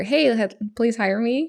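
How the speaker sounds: ordinary delivery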